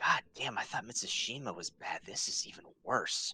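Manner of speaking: muttering under breath. Voicing a character looking at a chained creature: muttering under breath. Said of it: "just under his breath, he's just muttering".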